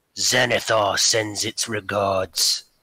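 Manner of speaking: deep growling orc-like monster voice with orcish inflections. A narrator voices a small bird-like creature delivering a message, deep orcish-inflected voice. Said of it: "a deep voice come out of this this small bird-like thing. Kind of seems to have a little bit of like orcish inflections".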